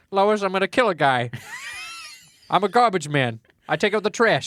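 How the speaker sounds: high, swooping, big and bouncy cartoon dad voice. Join in after someone says they sound like Peter Griffin, doing a Peter Griffin voice. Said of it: "I just sound like Peter Griffin".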